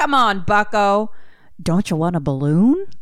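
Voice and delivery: coaxing, performed character voice. Retelling a movie scene, acting out the clown's lines: Pennywise voice. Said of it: "he's like".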